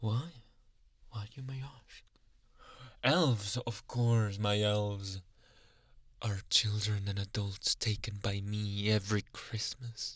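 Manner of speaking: yandere character voice in ASMR roleplay style. Santa, having taken the listener to his lair, explains where his elves come from, in yandere Santa ASMR roleplay.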